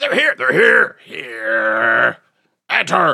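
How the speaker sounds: very loud, strange, rough, tinny buzzing voice. Narrating a creature opening its jaw and speaking: strange tinny buzzing voice. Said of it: "a strange buzzing voice ... very tinny, buzzy".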